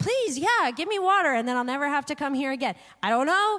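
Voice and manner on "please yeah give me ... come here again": sarcastic, mock-grateful put-on tone. Imagining how a verse sounds when heard in a put-on sarcastic tone. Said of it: "hearing it in a sarcastic tone of voice".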